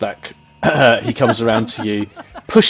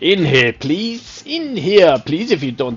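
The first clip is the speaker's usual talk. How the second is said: put-on French accent, higher; 7 semitones higher than usual. Voicing a character gesturing to a cage door: attempted french accent. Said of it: "I can't do a French accent now".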